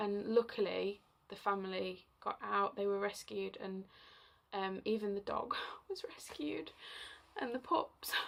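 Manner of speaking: breathy near-whisper, choking up with emotion. Recounting a frightening house fire, getting emotional. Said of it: "I don't know why I'm getting so emotional about it".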